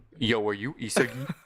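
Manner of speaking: lowest possible, very deep voice. Showing how a line for a dub role would sound: lowest voice. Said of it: "let me just do, like, my lowest voice".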